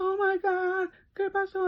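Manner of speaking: acted, very high-pitched, slow, nervous fretting mother voice. Recounting hiding an eye injury from mom, imitating nervous mom. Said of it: "my mom's one that she gets very nervous".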